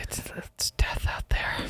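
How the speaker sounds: hushed, breathy whisper, barely voiced. Retelling how the other speaker narrated while landing: imitating someone whispering. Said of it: "You're just whispering over my shoulder".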